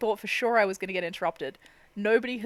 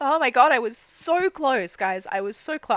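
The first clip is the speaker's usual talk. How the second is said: raised voice, cracking and breaking into tears; 4 semitones higher, 6 dB louder than usual. Talking to chat while admitted, breaking down mid-stream: starting to cry. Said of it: "almost made it through all of that without crying".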